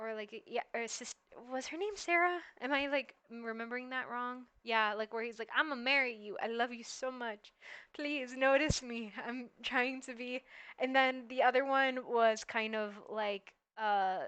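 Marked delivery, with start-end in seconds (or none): 5.6-10.4 gushing, smitten, lovestruck flirty tone, laid on thick. Recalling an anime troublemaker who always hit on the nun: imitating a flirting troublemaker character. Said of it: "where one's the troublemaker, and who I think he always hit on the nun".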